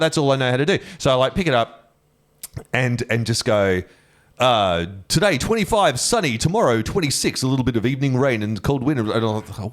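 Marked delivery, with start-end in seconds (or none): 5.1-9.1 put-on, pitched-up weather forecaster announcer voice. Imitating a radio announcer doing the weather, in a radio announcer voice. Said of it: "an impression of a, of a radio announcer doing the weather".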